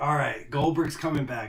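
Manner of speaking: ordinary talk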